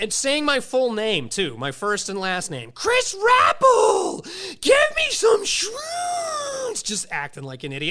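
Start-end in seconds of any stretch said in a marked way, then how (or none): 2.7-6.8 mock drunk screech, very high and very slow. Recounting a man in a parking lot yelling the speaker's full name: imitating a man screaming. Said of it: "He's screaming".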